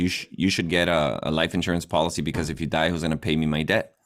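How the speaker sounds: ordinary talk, nothing marked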